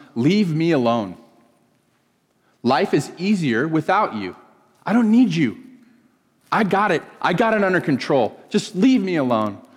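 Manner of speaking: mock half-voiced shout, mild and heated. Speaker retells a moment on the freeway yelling at god, retelling yelling at god. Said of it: "And I'm yelling at God".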